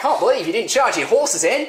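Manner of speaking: high, put-on Australian accent on every word. Asked to say a line in an Australian accent: [name]'s Australian accent. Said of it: "in an Australian accent".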